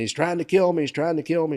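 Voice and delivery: put-on high, desperate woman's screaming cry. Recounting a call from an apartment where a lady was screaming, imitating a woman screaming. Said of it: "This lady's screaming".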